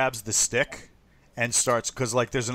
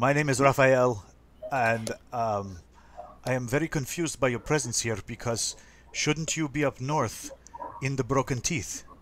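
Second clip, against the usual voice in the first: put-on Russian accent, character voice. Voicing a confused character meeting crash survivors: russian accent. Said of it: "why do you have a Russian accent?".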